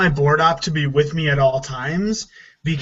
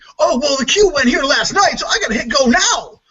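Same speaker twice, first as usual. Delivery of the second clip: very high, rushed, jeering put-on voice; 11 semitones higher, 3 dB louder than usual. Complaining about a board op who goes by the cues, imitating him: mocking Steve voice. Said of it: "use a mocking Steve voice".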